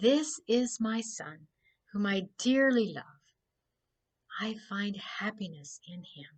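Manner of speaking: very quiet, hushed, barely-there voice. Narrating the baptism, voicing the voice that comes from the opened heavens: very quiet voice. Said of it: "there was a very quiet voice, very quiet".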